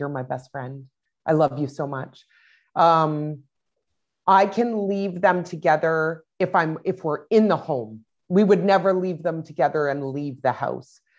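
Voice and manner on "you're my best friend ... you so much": imitated child whispering. Retelling what the oldest child says to his brother: imitating a child whispering. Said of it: "you'll hear Xavier whispering in his ear".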